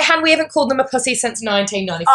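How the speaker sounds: ordinary talk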